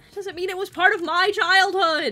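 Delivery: loud, high-pitched argumentative yell. Arguing back about old platformers and childhood: yelling in an argument. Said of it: "Why are we yelling?".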